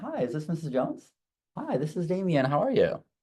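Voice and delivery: friendly, inviting, high, sing-song customer-service voice. Demonstrating how he sounds calling a customer on the phone: higher, friendlier customer-service voice. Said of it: "Your voice has to go up like two octaves".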